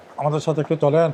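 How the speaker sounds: normal talking voice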